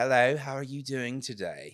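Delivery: very loud, high-pitched put-on British accent. Podcast host greeting listeners, in a fake British accent. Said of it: "let's talk in British".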